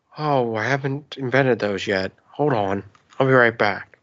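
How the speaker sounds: very calm, utterly serene zen-like voice. Playing George Lucas directing actors from the chair: George Lucas impression sounding like Bob Ross. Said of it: "my George Lucas is more and more starting to sound like, um, Bob Ross".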